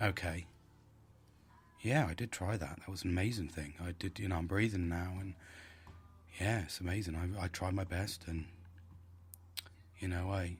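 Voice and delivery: toned-down, very low, soft, soothing murmur. The speaker demonstrates how they would sound with emotions down, emotions toned down. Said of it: "if I spoke at that level of just being like that and going".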